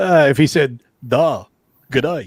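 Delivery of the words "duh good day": put-on fake Australian accent. Answering a dare to do the accent better: put-on Australian accent. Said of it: "let's see you do it".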